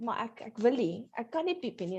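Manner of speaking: plain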